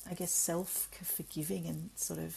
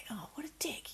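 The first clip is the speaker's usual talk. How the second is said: higher-pitched mutter under the breath; 6 semitones higher than usual. Retelling a reaction when someone cuts in on the road: imitating muttering under breath. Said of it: "I say it under my breath".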